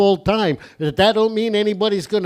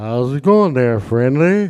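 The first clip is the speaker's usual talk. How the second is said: put-on totally stoned voice; 8 semitones lower than usual. Imitating a stoned TV giraffe greeting the giant: Jerome the giraffe impression. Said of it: "he'd be talking like".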